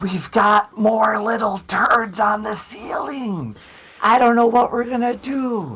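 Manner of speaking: whispering as loud as possible. A player's character turns back toward Gaju and Zephinia, loud whisper. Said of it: "I'm gonna whisper as loudly as I can".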